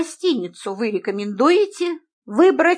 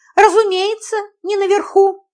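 tone pitched higher; 8 semitones higher, 4 dB louder than usual. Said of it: "в тон ему ответила я".

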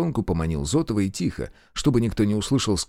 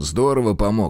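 plain

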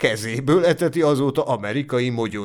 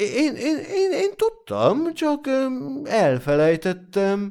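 flustered, embarrassed, very high-pitched, slow; 12 semitones higher than usual. Clarice answers the narrator's question, embarrassed. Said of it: "mondta zavartan".

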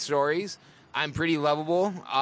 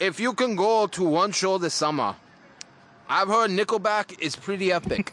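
fake Russian accent, higher; 4 semitones higher than usual. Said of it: "The accent that you will be doing is Russian".

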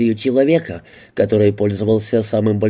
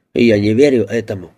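usual speaking voice

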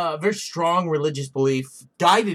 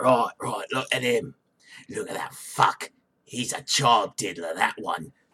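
very low, deep put-on British accent; 7 semitones lower, 4 dB quieter than usual. Speaker acting out dads reacting to a man on the street: put-on British accent. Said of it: "Are you doing Jason Statham or Sean Bean?".

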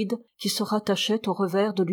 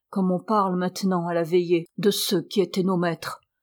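ordinary delivery, nothing marked

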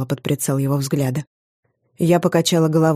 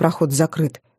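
plain

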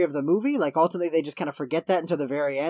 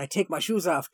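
put-on, exaggerated Japanese accent; 3 dB quieter than usual. Recapping a movie, quoting Pat Morita taking his shoes off: racist Japanese accent. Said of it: "I'm going to do a fucking racist accent".

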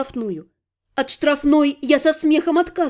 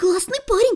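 high, secretive, confiding half-whisper; 7 semitones higher than usual. A woman adds a remark to her companion about a newly arrived guest, half-whispered. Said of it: "добавила она шепотом".

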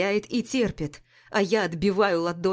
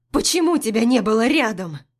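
voice cracking and breaking into a loud shout; 3 semitones higher, 5 dB louder than usual. A woman confronts the man who wants to help her, voice breaking into a shout. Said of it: "Голос срывается на крик".

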